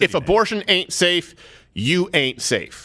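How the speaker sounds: ordinary talk, nothing marked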